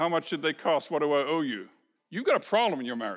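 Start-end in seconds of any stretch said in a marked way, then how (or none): 0.0-1.7 deadpan, toneless, flat monotone delivery. Speaker addresses men, acting out a wife given flowers, imitating a flat voice. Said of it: "she says in a kind of a flat voice".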